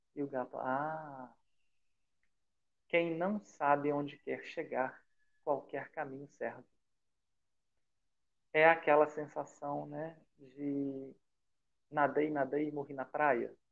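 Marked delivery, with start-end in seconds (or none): 0.6-6.7 silky, velvet-smooth, cat-like voice. Retelling how the cat greets Alice on the road: velvety cat voice. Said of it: "com aquela voz aveludada".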